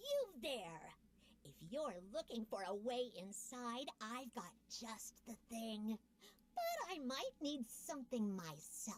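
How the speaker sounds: piercing, shrill, high creature calling-out voice. A narrator voices a Knoll calling out to the listener: shrill voice. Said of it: "calls out to you in a shrill voice".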